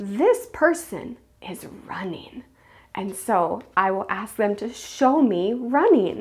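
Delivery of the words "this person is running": whispered, quieter. Explaining a guessing game, showing how she whispers a card to a player: whispering. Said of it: "I'm gonna whisper to them".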